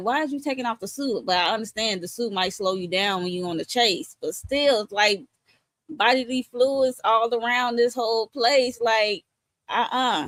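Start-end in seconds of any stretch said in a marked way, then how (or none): 0.0-1.2 raised, pitched-up, exasperated yell. Retelling own reaction to a scene: retelling own past yelling. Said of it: "I was yelling".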